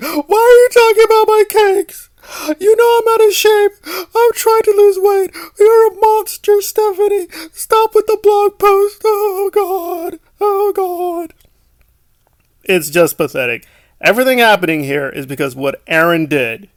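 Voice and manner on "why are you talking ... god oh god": put-on, shrill, very high fake sobbing whine. Mocking a person's predicted reaction to a blog post: mocking imitation of crying. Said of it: "start crying like a little girl".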